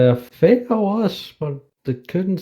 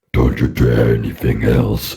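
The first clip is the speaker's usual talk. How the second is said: very deep, low, put-on demonic voice. Imitating the game's loading message, imitating a demonic voice. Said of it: "the demonic voice".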